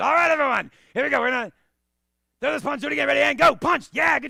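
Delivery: very loud, high, shrill, raspy voice, rattled off. Showing how he copied his instructor when he first taught class, imitating instructor's raspy voice. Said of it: "I had a rasp to my voice".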